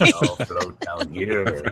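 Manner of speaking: low, slow, creepy clown voice. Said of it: "the it clown".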